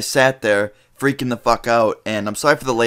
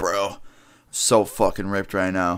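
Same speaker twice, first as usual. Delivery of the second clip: put-on stoned-sounding bro voice; 4 semitones lower, 5 dB quieter than usual. Retelling what a friend says at school when high: imitating a high friend. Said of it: "he'd come in and be like".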